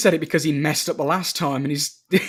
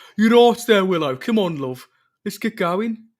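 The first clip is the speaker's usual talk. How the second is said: Midlands Birmingham Brummie accent; 2 semitones higher, 4 dB louder than usual. Imitating a character talking to Willow, in a Midlandsy Brummie accent. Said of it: "Midlandsy kind of Brummie accent".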